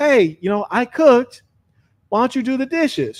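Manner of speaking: mock blunt, aggressive tone. Acting out the listener's part in a hypothetical, blunt, aggressive demand. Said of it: "You're straightforward, aggressive with it".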